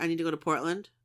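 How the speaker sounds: usual speaking voice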